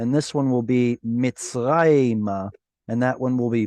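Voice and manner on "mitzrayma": Mitzrayma, slow, stress on the second-to-last syllable. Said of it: "Hebrew word with penultimate stress".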